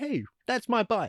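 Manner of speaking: very high-pitched, acted-out line reading. Quoting the director's line from the film: Joe Rubin voice. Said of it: "is voiced by the director, Joe Rubin".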